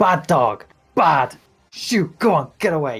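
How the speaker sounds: vicious, loud, slow scolding shout. In a game, your character turns round and shouts at the orange wolf. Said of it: "I'm shouting at the orange wolf".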